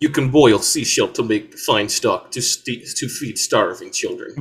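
comic fake Russian accent. Riffing in a group comedy bit: put-on russian accent. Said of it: "5 minutes of [name] just doing Russian".

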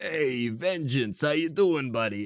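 put-on slow, laid-back New York guy accent. Recounting a movie, the speaker voices characters greeting Vengeance in a New York accent. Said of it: "I turned him into a New York guy".

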